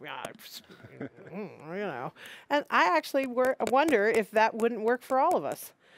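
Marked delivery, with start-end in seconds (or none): 0.0-2.1 acted-out very low, very soft grumbling mutter. Speaker acts out someone reacting to a bill insert about neighbors, mock grumbling.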